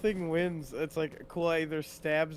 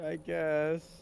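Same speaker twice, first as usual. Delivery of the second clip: glum, unhappy-sounding voice. Agreeing to pull out the whip and start slashing: sounding unhappy. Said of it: "You sound so unhappy!".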